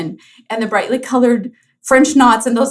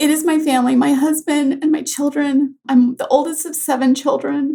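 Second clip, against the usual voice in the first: tearful, choked-up crying voice, breaking; 4 semitones higher than usual. Asked what brings joy outside work, the guest answers, crying. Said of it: "I'm already crying".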